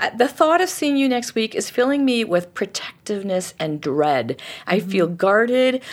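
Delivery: normal talking voice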